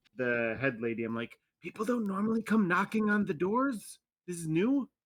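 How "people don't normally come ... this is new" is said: speaking in a whisper, higher. Whispering a question to the head lady in character: whispering. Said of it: "I'm gonna continue whispering to the".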